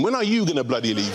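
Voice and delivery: ordinary talk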